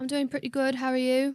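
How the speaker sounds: put-on British accent. Trying out an accent she wants to fake for a night out; fake british accent. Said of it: "I could do a hold on".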